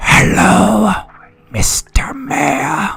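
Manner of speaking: menacing put-on horror-film killer voice, pitched high. Joining a bit, a greeting in a put-on killer voice. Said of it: "I think I can do this killer voice".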